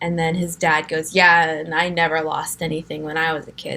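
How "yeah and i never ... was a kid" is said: mocking tone laced with heavy sarcasm. Quoting the boy's dad during one of their rare fights, imitating a sarcastic tone.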